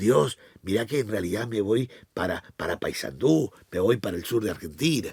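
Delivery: hushed half-whisper under the breath. Acting out a secret prayer so Satan will not hear: half-whispering a mock prayer. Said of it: "y vos de bajito le decís".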